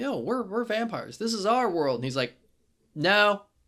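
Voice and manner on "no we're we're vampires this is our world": put-on anger, pissed-off, higher pitch. Recapping a story to a co-host, retelling an angry retort. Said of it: "And she's all pissed off".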